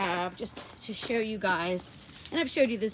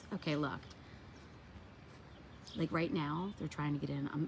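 hushed, lower, much quieter whisper; 6 semitones lower, 10 dB quieter than usual. Speaker talking to 'you guys' about their garden, whispering. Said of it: "I'm whispering because".

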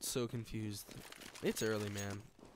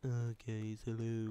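put-on downbeat, glum voice. Speaker mimicking how they sound in their own videos, imitating own down-sounding voice. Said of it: "I sound really down".

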